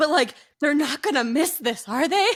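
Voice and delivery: acted, deeply worried, frantic fretting tone. Imitating people who ask about homeschooling: imitating a deeply concerned, frantic tone. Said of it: "tone of voice of this, like, deep concern and kind of, like, frantic".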